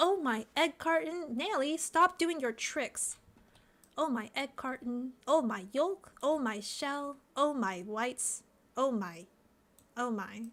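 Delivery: slow, drawn-out, stretched-out character voice. Answering a viewer's voice request by speaking as Eggy: Eggy voice. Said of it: "Voice request. Eggy says".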